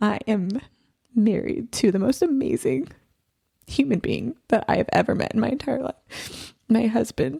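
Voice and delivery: choking up, on the verge of tears. Asked how her story ends, answering on the verge of tears. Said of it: "I am going to cry again".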